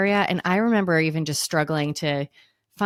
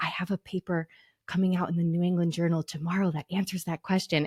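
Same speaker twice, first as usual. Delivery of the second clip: soft, hushed stage whisper under the breath; 6 dB quieter than usual. Retelling what a co-intern half-whispered while tugging a shirt: imitating someone half-whispering. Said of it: "tugs on my shirt and whispers".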